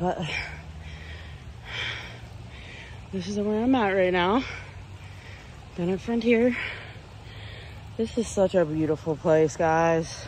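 out of breath. Vlogger jogging in Frontier Park, talking to viewers, out of breath. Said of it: "I'm a little bit out of breath".

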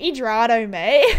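joking, put-on Australian accent. Trying out a word from another language, joking: put-on Australian accent. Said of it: "That sounds so Australian".

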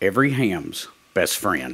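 low, heavy, dripping sarcasm. Opening a segment on radio frequency interference for fellow hams, sarcastic. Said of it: "there was a lot of sarcasm in that opening statement".

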